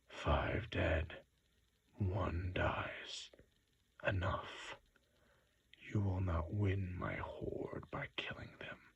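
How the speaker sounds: vast, great, dry, parched dragon voice. The dragon speaks to the little wizard, in a great dry dragon voice. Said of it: "said the great dry voice of the dragon".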